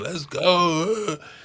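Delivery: high hype-man scream, word "go" drawn out. Retelling a crowd being hyped after a drink: imitating Josh Allen screaming. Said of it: "just starts screaming".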